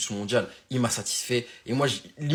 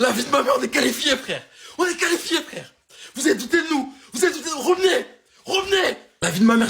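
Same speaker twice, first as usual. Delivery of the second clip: overcome, near tears, loud and high-pitched; 7 dB louder than usual. Celebrating the team's qualification after the match: tearful with emotion. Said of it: "j'ai les larmes aux yeux".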